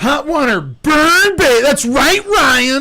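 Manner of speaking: very high, loud comedic bit voice. Showing how the caller said the name: Adam Sandler Hot Water Burn Baby voice. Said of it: "The way he's saying Joshua is".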